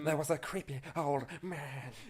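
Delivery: unhurried, slow, deliberate, drawn-out delivery. Voicing the creepy character's line again: sounding like Tim Curry. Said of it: "You sound like Tim Curry".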